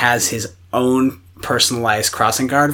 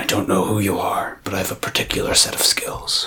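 put-on menacing voice, lower and quieter; 5 semitones lower, 4 dB quieter than usual. Quoting a line from the movie Taken: Liam Neeson impression. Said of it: "That was a decent impression".

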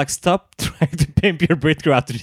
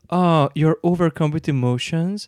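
emotionless, level, toneless monotone delivery; 2 semitones higher than usual. Ru reacts to two people tearing up and hugging, as Ru in a really monotone voice. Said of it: "in a really monotone voice".

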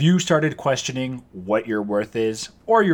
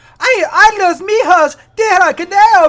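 put-on cartoon Mexican accent, higher and louder; 10 dB louder than usual. Doing a voice from the Looney Tunes cartoons: Speedy Gonzales voice. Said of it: "Speedy Gonzalez".

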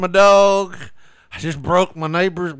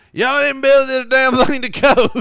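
mock drunken indignation, higher pitched; 8 semitones higher, 4 dB louder than usual. Imagining what a drunk man might say: imitating an indignant drunk. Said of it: "indignant drunk".

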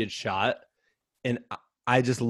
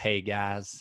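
Texas drawl, much quieter; 3 semitones lower, 7 dB quieter than usual. Speaker retelling a man's surprise arrival at dinner before a race, Texas drawl. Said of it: "you just hear this Texas drawl".

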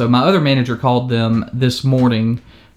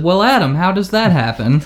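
snide, mocking, high-pitched sing-song sarcastic tone; 6 semitones higher than usual. Retelling a phone call with a manager: imitating sarcastic manager. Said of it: "he was completely sarcastic".

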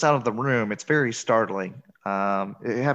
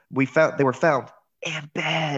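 put-on whisper, higher pitch; 3 semitones higher than usual. Retelling how the sheriff's mother says a line: imitating a whisper.

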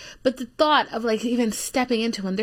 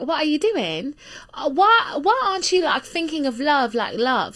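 strong, put-on heavy English accent; 4 semitones higher, 3 dB louder than usual. Speaker finishing a rant, slipping into a heavy English accent. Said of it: "she got like a heavy English accent at the end".

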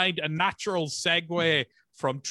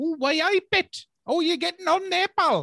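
very high-pitched, attempted Geordie accent; 12 semitones higher than usual. Speaker tries out an accent in conversation, Geordie accent. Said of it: "let me try and do a Geordie accent".

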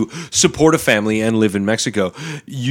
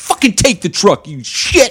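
put-on furious, fed-up, livid outburst, higher pitch; 8 semitones higher than usual. Retelling slamming his truck keys into a gunman's hand: retelling a livid outburst. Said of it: "I am just livid at this point".

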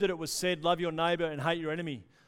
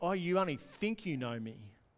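put-on sarcastic retort, quieter; 4 dB quieter than usual. Acting out the master's sarcastic reply to the servant: put-on sarcasm. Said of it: "it's actually a sarcastic response".

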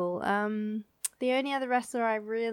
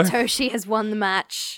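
ordinary delivery

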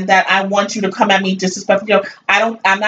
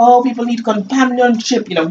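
put-on big, heavy, thick French accent laid on; 3 semitones higher than usual. Speaker mimics a 42-year-old man she ended up blocking, big french accent. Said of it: "big old French accent".

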